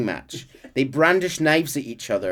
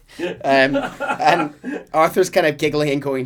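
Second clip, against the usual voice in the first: plain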